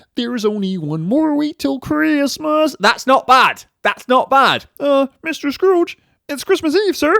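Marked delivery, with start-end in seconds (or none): 4.8-7.2 felt frog puppet voice, pitched up. Doing impressions, you address Mister Scrooge on Christmas Eve, in a Kermit impression. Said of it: "he started the impressions".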